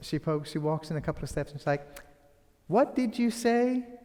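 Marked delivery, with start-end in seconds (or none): 2.7-3.8 high-pitched, calm, completely unfazed delivery. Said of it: "Rabia is just unfazed".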